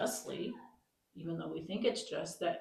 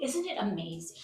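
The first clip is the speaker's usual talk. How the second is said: usual speaking voice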